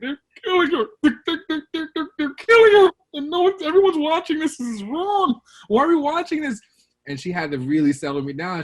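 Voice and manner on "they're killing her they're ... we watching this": mock very high, loud, gasping, sobbing, hyperventilating panic. Recalling his mom rushing into the room; retelling hyperventilating panic. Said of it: "And I'm hyperventilating".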